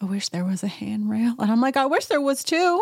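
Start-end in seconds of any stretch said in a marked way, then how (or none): 0.0-1.3 imitated gentle, quiet aside, higher pitch. Retelling a woman struggling up the stairs, retelling a gentle remark to herself. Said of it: "she's saying gently to herself".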